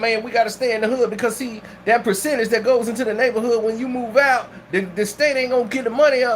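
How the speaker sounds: normal talking voice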